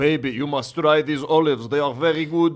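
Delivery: mocking delivery. Imitating a husband bringing olives home to his wife. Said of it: "Be like".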